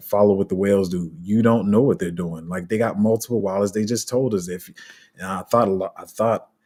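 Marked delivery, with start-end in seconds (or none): none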